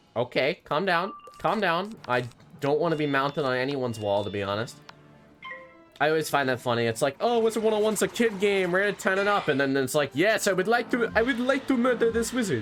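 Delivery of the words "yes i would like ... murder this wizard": acted stock Transylvanian accent. Joking about a wizard game, voicing someone who wants to murder a wizard, stereotypical Transylvanian accent. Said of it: "the stereotypical Transylvanian accent".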